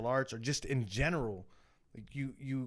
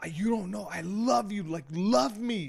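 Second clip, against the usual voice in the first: put-on sobbing voice, higher and louder; 7 semitones higher, 5 dB louder than usual. Retelling crying to a partner to be loved: retelling a crying plea. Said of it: "I would cry my fucking eyes out".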